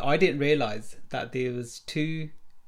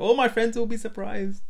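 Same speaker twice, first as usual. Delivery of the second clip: put-on Indian accent, pitched up; 9 semitones higher than usual. Retelling a man's reply about friends back home, in an indian accent. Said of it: "In an accent".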